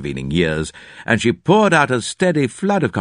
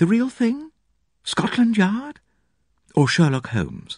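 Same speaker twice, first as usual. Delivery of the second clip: soft, quiet, very high-pitched little voice; 10 semitones higher than usual. Narrator reading a woman answering his wish to be a detective, quiet remark. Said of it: "and her few quiet remarks heightened my first impression of her as a thoroughly fascinating woman".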